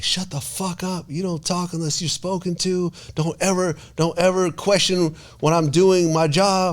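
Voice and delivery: shrill, very high, furious angry screaming. Retelling what one woman screamed at another in front of everybody: retelling an angry scream. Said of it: "she just screamed at her".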